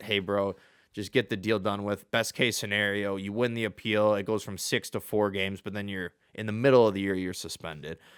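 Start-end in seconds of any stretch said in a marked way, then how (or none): none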